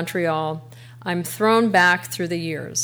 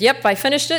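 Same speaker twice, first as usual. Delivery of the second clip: put-on flat Connecticut accent; 7 semitones higher than usual. Quoting what a woman said to the speaker, in her flat Connecticut accent. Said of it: "in her kind of flat Connecticut accent".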